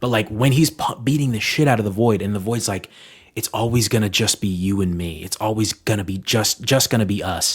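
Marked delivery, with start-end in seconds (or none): none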